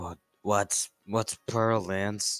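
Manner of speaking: put-on drunken, tipsy attempt at whispering. Voicing a drunk character trying to whisper a question: drunk attempt at whispering. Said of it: "trying to whisper, but he's, you know, drunk".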